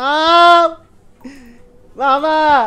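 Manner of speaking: high, loud, terrified panicked scream.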